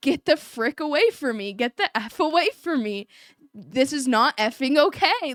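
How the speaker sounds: put-on emphatic, fed-up, insistent voice, almost screaming. Recounting a confrontation after raising their voice failed, retelling almost screaming. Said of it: "I was almost screaming now".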